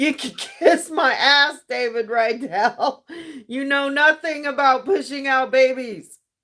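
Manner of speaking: hollering at full force. Ranting to listeners about a man's remark, yelling. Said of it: "Is I'm yelling".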